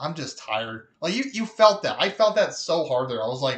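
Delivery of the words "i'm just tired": put-on offhand, soft, casual, low-temperature delivery. Describing a film scene and quoting a character's line, retelling it casually, low-key. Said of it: "kind of low temperature in his voice".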